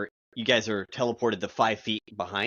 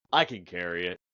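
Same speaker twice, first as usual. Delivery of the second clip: put-on deep voice like an oversized kid; 3 semitones lower than usual. Voicing an eight-year-old Goliath kid who pats his arm, in a deep kid voice. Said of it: "He's got a deeper voice than he should".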